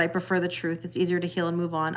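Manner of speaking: ordinary talk, nothing marked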